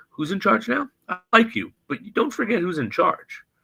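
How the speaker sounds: play-acted dead calm, pitched very high. Retelling a scene where a character asserts who's in charge, imitating speaking very calmly. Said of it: "but very calmly".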